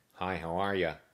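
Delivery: bright, happy, cheerful nasal character voice. A narrator reads a jail cellmate greeting a newcomer; happy, nasally voice. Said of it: "a happy, nasally voice".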